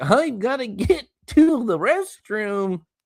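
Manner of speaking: very high, very slow, stretched-out drawl. Imitating a quarterback hurrying to the restroom: C. J. Stroud impression. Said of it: "that was my best C J Stroud impression".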